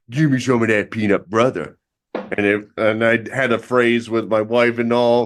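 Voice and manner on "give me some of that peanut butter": put-on dog voice. Retelling what the pet dog would say while they make a sandwich; voicing the pet dog. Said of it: "she'd say".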